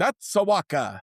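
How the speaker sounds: hammed-up, slightly high put-on Italian accent. Joking about a nickname, the speaker says it with an Italian accent. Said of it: "you got to say it with an Italian accent though".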